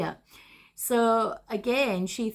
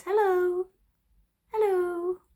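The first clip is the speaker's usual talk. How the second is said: put-on very high small child's voice; 10 semitones higher than usual. Retelling a story, the speaker voices the answer the woman hears: Victoria's little voice. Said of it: "she could hear this little voice".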